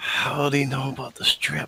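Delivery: very whispery stage whisper. Playing a character who asks another player a secret question: very low hushed whisper. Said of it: "very low, whispering, very whispery, hushed tone".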